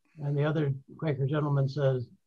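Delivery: ordinary delivery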